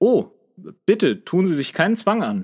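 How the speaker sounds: friendly, obliging tone. Narrator reading Frank's reply to a policeman, amiably helpful. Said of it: "entgegnete Frank in einer liebenswürdigen Hilfsbereitschaft".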